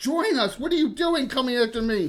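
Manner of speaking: high-pitched orc monster voice, bellowing and yelling. Describing the encounter, the speaker voices an orc yelling at the listeners: orc yelling. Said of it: "He's yelling at you in orc".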